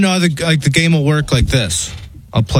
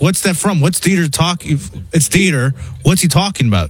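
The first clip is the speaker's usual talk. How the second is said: plain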